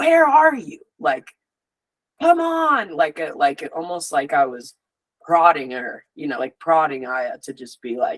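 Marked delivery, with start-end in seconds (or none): 0.0-2.9 mock insistent angry voice, very high and swooping. Speaker retells lying there, silently calling out to Aya, retelling angry inner shout. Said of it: "I was angry and I was like".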